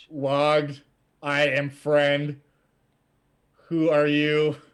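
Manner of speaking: put-on booming voice, like speaking to a child. Voicing the thing that speaks to you, in a booming voice as if to a child. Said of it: "like speaking to you as a child, but with like this booming voice".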